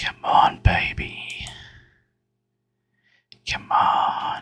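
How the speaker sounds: hushed whispering voice. Playing a game and searching for what has moved: whispering. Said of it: "I'm gonna stop whispering now".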